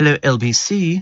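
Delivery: put-on posh radio announcer voice, very slow. Mocking a man who puts on a voice for the programme, in a put-on posh voice. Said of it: "He he puts on a posh voice".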